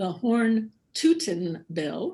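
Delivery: slow, deliberate, carefully spaced-out words. Naming a state funding bill for listeners: said slowly. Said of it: "I'll say this slowly for our listeners".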